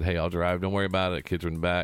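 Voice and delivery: normal talking voice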